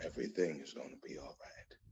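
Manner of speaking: very soft, barely audible, close whisper. A speaker retells what God whispered to them while driving, retelling a whisper.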